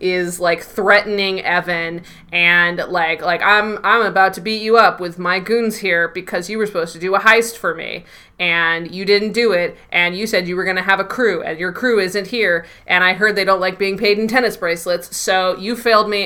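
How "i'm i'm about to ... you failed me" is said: plain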